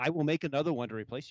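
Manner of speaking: strict father-type voice.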